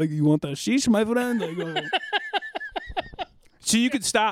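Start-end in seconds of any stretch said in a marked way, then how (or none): 0.1-1.4 man's exaggerated, caricatured Middle Eastern accent. Recounting a man who pulled out a little vest, quoting him: offensive Middle Eastern accent imitation. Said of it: "offensive reenactment of what I think a Middle Eastern man sounds like".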